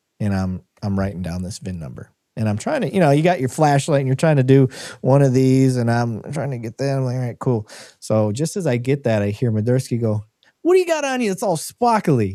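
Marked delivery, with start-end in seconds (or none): 10.6-12.4 put-on thick New Jersey accent, very high. Speaker retells Madursky calling out while he writes down a VIN: imitating Madursky's thick Jersey accent. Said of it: "He's got this huge Jersey accent".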